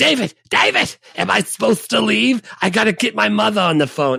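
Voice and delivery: high, rough, gravelly yelling. Retelling a movie scene where Harvey Fierstein yells at Jeff Goldblum: Harvey Fierstein yelling. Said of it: "when he's yelling at".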